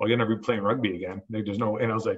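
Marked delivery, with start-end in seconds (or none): 0.0-1.2 acted-out, mock scoffing voice. Retelling a doctor's reply about playing rugby again, imitating a doctor scoffing. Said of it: "one of the doctors almost like scoffed at me".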